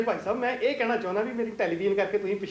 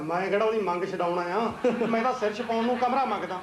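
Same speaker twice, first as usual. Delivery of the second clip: normal talking voice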